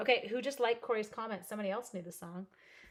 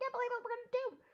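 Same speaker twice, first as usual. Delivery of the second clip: rushed, high-pitched squeal of excitement. Showing how she sounds when she gets super excited, imitating a super excited squeal. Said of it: "I just get super excited and I'm like".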